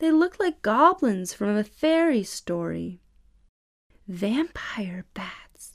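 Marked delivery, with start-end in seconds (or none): 4.1-5.8 soft, hushed whisper under the breath. In a cave, a girl speaks to the boy beside her: whispered. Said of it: "whispered Allie to Josh".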